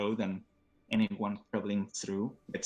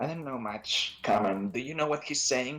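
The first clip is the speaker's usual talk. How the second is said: talking like a goblin; 3 semitones higher than usual. Voicing a goblin who turns to another goblin: speaking Goblin. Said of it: "he turns to the other and says, uh, in Goblin".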